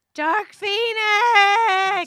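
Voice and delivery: very high, very loud, shrill shout. Handed the next topic, announce the film title yelling. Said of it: "Stop yelling".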